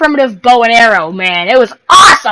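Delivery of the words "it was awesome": full-on loud, sudden shout right into the mic. Speaker telling the audience about a homemade bow and arrow, yelling. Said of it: "Sorry, I just yelled in your ear".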